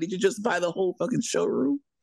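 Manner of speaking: mock sassy man's voice. Retelling what a sassy guest said on seeing the furniture: imitating a sassy man.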